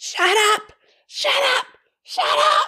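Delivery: really shrill, high, repeated shouting. Retelling what Erin said when she felt cornered, shrill like Erin. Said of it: "She said it really shrill".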